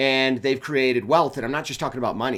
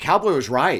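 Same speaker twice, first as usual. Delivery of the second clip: plain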